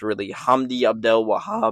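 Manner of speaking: voice cracking. Speaker discussing fight results names a fighter: voice cracking. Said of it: "my voice just cracked".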